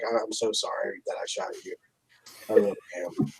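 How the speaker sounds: hushed, whispery mumble under the breath. Voicing a sulking character on the ride home: mumbling. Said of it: "what are you mumbling over there?".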